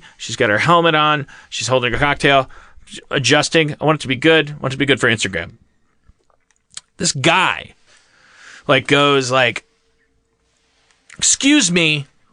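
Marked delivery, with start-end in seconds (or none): 11.2-12.1 put-on commanding tone, higher pitch. Retelling how a stranger at a bar interrupted a photo: imitating a commanding stranger.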